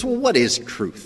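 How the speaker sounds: high, dismissive, ridiculing, mocking sarcastic tone. Retelling how Pilate dismissed Jesus: Pilate's sarcastic ridicule. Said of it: "This is more sarcasm and ridicule".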